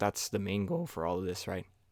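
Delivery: cracking, breaking voice. Vlogger wrapping up the day's video, voice cracking. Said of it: "My voice just cracked".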